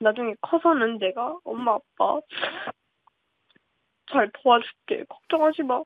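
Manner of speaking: choked-up voice welling with emotion, near tears. Asked for a message to Mom and Dad, the speaker goes on; choked up. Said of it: "갑자기 엄마 아빠 생각하면 이렇게 울컥해요".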